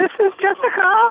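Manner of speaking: put-on woman's voice. Asked on the show to sound different, answering in a woman's voice. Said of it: "Talk in a woman".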